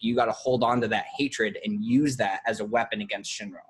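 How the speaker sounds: ordinary delivery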